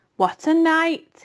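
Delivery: husky voice. Narrating a swollen rat back from a night of feasting, repeating himself hoarsely. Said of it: "he rep repeated hoarsely".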